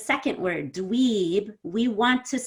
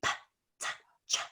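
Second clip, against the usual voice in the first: voiceless, very quiet whisper, soft consonants. Showing that voiceless consonants can be said without voice: whispering. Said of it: "I could whisper those".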